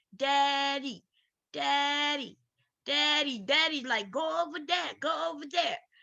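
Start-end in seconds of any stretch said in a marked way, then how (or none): 0.2-3.8 play-acted very slow, drawn-out, mild, pleading little-girl wail. Retelling a little girl screaming for her father, imitating a girl screaming. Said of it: "She's screaming for her hero".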